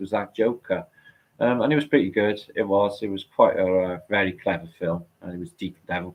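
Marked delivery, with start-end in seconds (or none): none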